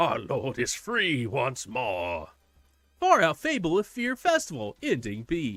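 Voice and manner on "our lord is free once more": rasping, raspy voice. Reading a game's text aloud, a cult leader speaks: raspy voice. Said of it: "they say in a raspy voice".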